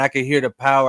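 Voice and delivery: ordinary talk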